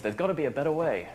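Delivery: late-night infomercial announcer voice, pitched high. Talking about it compliance, breaking into a pitch in their best infomercial announcer voice. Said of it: "put on my best infomercial voice".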